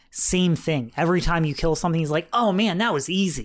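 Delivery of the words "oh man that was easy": acted cocky, smug, arrogant boasting. Retelling what Atreus says after each kill: imitating arrogant Atreus. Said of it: "now he's acting all arrogant".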